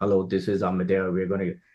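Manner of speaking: very low, very soft, hushed pilot announcer voice. Giving an example of how an airline pilot talks, in a low pilot voice. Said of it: "the pilot will always talk in the lower tone voice".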